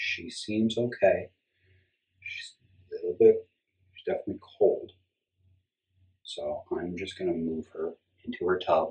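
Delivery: easygoing, calm, gentle, careful talk. Handling a ball python, talking quietly so as not to scare her. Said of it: "I'm talking so quietly because I just don't want to scare her".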